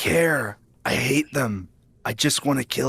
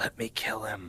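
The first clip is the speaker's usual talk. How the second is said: hushed whisper; 11 dB quieter than usual. A player in a tabletop game speaks in character: whispering in character. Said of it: "Are you whispering this in character?".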